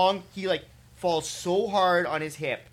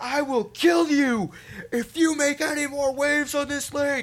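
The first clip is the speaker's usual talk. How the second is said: mock screaming, much higher, louder, slower; 9 semitones higher, 3 dB louder than usual. Retelling a man screaming threats at a fisherman on a lake, imitating him screaming. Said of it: "begins screaming at this man".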